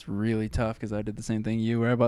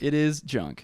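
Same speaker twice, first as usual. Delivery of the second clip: heavily stressed, maximum emphasis on every word; 4 semitones higher than usual. Repeating a verdict on budget camera gear, said with the most emphasis. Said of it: "I'm gonna say it in the most emphasis".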